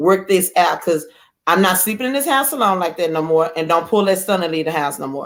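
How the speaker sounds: plain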